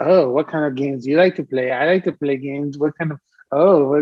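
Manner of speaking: mock super flirty, awkwardly seductive, sexy voice. Retelling a scene where adults act awkwardly sexy: imitating flirtatious adults. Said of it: "super, like, flirtatious and, like, awkwardly".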